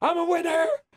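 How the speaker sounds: put-on high, drunken scream of i'm a winner. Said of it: "he just kept screaming".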